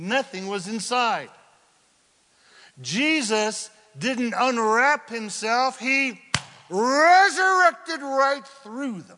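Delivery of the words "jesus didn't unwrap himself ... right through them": thrilled, high, excited shouting. Retelling the resurrection story to an audience, an excited shout. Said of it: "Sorry for the shout".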